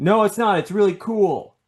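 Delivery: mock excited shouting, pitched very high. Talking about Thanos with another speaker; yelling excitedly. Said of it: "why are you yelling about it? I just am".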